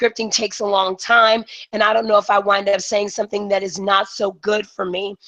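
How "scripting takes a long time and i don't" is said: plain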